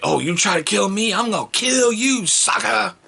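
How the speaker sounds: put-on very high, irate, rising, drawn-out voice. Retelling overhearing the daughter while gaming: imitating daughter's angry gaming taunt. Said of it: "getting irate and getting upset".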